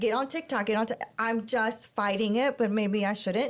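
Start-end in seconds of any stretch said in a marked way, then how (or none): none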